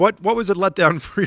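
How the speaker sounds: laughing through the words, broken by a laugh.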